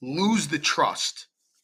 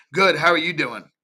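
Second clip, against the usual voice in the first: mock standoffish, guarded tone; 5 dB louder than usual. Speaker acts out an inbound lead replying to a greeting: mimicking a standoffish reply. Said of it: "they're a little standoffish".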